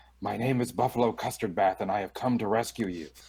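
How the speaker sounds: whispering in a put-on character voice. Playing a character who slips up to a chained dragon: whispering in character. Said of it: "I start whispering to the dragon".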